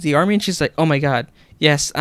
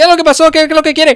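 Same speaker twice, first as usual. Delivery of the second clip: put-on screaming yell, much higher and louder; 13 semitones higher, 8 dB louder than usual. Retelling a spam phone call, the speaker answers it: retelling screaming like a Mexican dad. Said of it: "just trying to sound like a Mexican dad".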